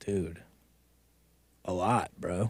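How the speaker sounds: hushed low mumble.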